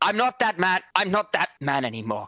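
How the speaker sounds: loud, high yelling. Role-play player voices his character pausing mid-walk, then shouting. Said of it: "and then shout".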